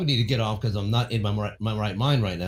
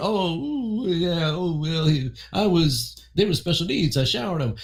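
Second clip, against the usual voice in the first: mock breezy, casual, dismissive offhand ramble; 8 semitones higher than usual. Mocking how people talk about abuse: imitating casual dismissive talk. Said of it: "talk about it like it's no big fucking deal".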